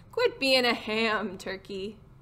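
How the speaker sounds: usual speaking voice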